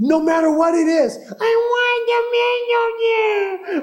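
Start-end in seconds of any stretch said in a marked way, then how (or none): 1.2-3.8 put-on very slow, high, drawn-out toddler whine, "million" stretched out. A parent mimics their two-year-old daughter in a complaining mode, imitating Daisy's whining. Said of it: "Just that whining tone and tenor".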